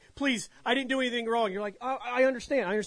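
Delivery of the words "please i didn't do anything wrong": mock, higher-pitched, acted-out pleading scream. Describing people dragged to the Iron Maiden, acting out their pleading scream. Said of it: "They'd be screaming like".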